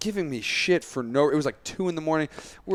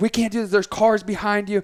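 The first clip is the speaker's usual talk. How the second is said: loud, pitched-up, angry scolding yell; 6 semitones higher, 6 dB louder than usual. Retelling a woman at the parking lot yelling when your card failed, retelling her yelling. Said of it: "she's like yelling at me".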